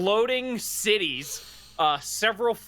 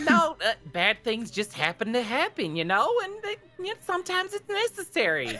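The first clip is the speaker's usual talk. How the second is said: put-on doll-like Southern drawl, pitched up; 6 semitones higher than usual. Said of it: "She's fucking southern".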